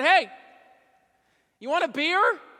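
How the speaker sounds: very loud, high hollered yell. Retelling calling out from his garage to a man down the street, retelling a yell. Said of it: "I yelled at him".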